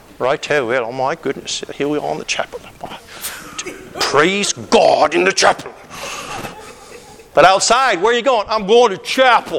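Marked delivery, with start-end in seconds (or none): 0.2-5.8 sudden put-on English accent. Mocking people at seminary who speak differently in the chapel: mock English accent. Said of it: "all of a sudden everybody's got an English accent".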